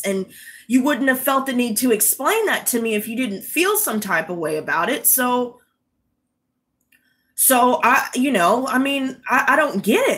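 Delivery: normal talking voice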